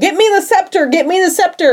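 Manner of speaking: acted yelling. Retelling a story as the king yells for help during an attack: retelling a yell. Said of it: "Morpheus yells for Nemo".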